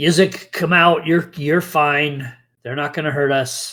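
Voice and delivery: put-on goblin creature voice. Narrating a scene, the speaker voices the goblin calling to Yizik; goblin voice. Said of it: "the goblin just goes".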